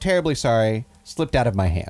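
acted, deliberately insincere, dead-straight deadpan delivery. Speaker retells what a man says to a kid by his trunk, retelling a deadpan apology. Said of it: "in a very deadpan way".

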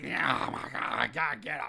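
raspy, creaky voice, throat sounding cigarette-worn. Describing how a man talks, the speaker does a Madame Mortimer impression. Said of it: "He talks like".

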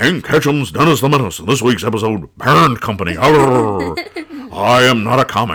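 put-on old-time politician delivery, long drawn-out "arr". Reading the comic's title again as Nixon might: Nixon voice. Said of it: "maybe Nixon could do it".

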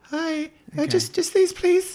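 put-on very high sixteen-year-old teenage voice. Role-playing buying a magazine from a pretend cashier, in a 16-year-old voice. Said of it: "I need to make my voice 16-year-old me".

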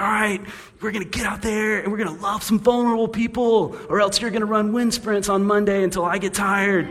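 furious, angry coach rant, very high-pitched. Joking about a guilt-trip sermon, imitating an angry football coach at halftime. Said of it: "a football coach at halftime who's really angry".

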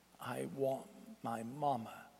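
very quiet, close, hushed half-whisper. Narrator reads Michael speaking into the narrator's ear: half-whispering. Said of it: "as he whispered in my ear".

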